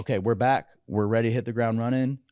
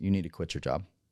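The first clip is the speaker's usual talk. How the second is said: deadpan, dropped low, no fuss; 5 semitones lower, 6 dB quieter than usual. Retelling what she said when you walked in a mess, deadpan. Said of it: "Just deadpan".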